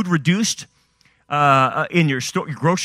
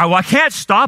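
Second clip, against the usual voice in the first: ordinary talk, nothing marked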